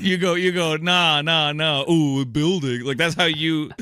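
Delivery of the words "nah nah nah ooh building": put-on slow, dopey dumb-guy voice. Mocking how the other person answers valid points, in a dumb guy voice. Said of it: "in a dumb guy voice".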